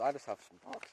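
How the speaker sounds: voice cracking partway through the phrase. Describing what is in a Claymore bag, the speaker's voice cracks. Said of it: "sorry, voice crack".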